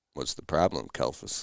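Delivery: mock cool, totally unbothered, dead calm tone. Retelling a calm reply while working on a tree: imitating Chris's calm voice. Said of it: "he just is calm as shit".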